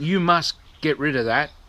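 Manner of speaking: ordinary delivery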